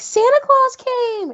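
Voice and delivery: mock very high shriek at full force, top of lungs. Recalling waking parents at 5:30 on Christmas morning as a kid, retelling a childhood scream. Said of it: "I would just scream on the top of my lungs because I'm like".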